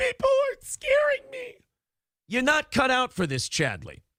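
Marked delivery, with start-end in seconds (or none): 0.0-1.5 mock, very high-pitched, blubbering, tearful crybaby whine. Mocking someone by acting out what they say: imitating someone crying. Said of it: "Then you start crying and going".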